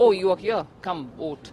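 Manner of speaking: normal talking voice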